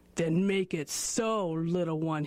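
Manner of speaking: slow, drawn-out growl. Reading a story, the narrator voices Grizzly rising to face Guscombe, growling. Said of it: "he growled".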